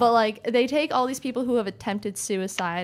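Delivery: ordinary delivery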